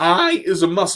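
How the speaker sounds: voice breaking and cracking mid-line. Host talking to listeners on live radio, voice cracking. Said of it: "And my voice just cracked".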